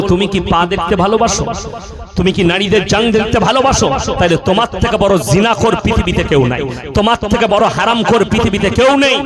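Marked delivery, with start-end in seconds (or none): none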